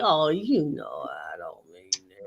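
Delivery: silky, swooping, sing-song smooth-talker voice. Imitating how someone will smooth talk his way back: imitating a smooth-talking voice. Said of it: "He thinks he's gonna put on that voice and say".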